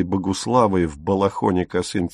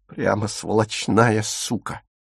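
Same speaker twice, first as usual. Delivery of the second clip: plain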